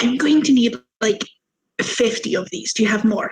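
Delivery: hushed, whispered words. Player's character asks the goblin who brought the rum glasses for more, whispering to a goblin. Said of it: "kind of whisper to the little goblin".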